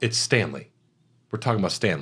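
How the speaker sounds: acted wistful, near-crying, whimsical reverence. Retelling what Jack Nicholson told his assistant: imitating teary Jack Nicholson. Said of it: "getting real whimsical and teary about it".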